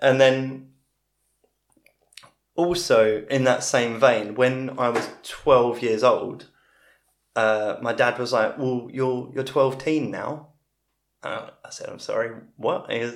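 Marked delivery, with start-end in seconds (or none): 8.6-10.5 poorly done, fake Dutch accent. Retelling what dad said when the speaker turned twelve, bad Dutch accent. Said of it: "he'd do it with a bad Dutch accent".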